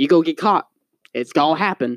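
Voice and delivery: normal talking voice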